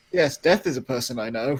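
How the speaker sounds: dead earnest, deadly serious, not joking at all. Play Magnus speaking to Erica after whispering to her, in a deadly serious Magnus voice. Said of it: "He's like deadly serious".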